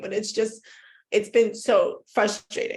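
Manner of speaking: crying while talking. Talking about a quarrel with a sister while crying while talking. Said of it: "I hate the fact that I am crying".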